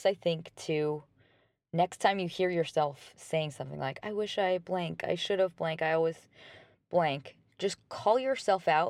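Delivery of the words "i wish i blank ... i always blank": ordinary delivery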